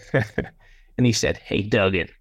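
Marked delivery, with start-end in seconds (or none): 1.4-2.0 put-on American accent, lower. Retelling a phone call from John: American accent imitating John McMahon. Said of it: "when I do an American accent, it's always a John McMahon accent".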